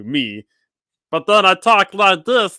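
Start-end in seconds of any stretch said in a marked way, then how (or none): 1.1-2.6 put-on cowboy voice, much higher, louder. Game master showing players how an NPC sounds: Meatball the Cowboy voice. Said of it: "you're talking to Meatball the Cowboy".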